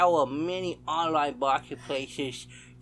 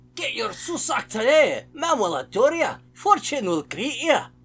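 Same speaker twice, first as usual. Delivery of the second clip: put-on Scottish accent, loud and slow; 8 semitones higher, 8 dB louder than usual. Gamer reading an in-game sign aloud, in a scottish accent. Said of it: "I don't know why I read that in a Scottish accent".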